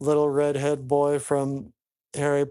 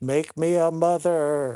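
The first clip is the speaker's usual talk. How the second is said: put-on Finnish accent on every word; 3 semitones higher than usual. Retelling a story, the speaker voices a woman's line in a finnish accent. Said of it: "says in her Finnish accent".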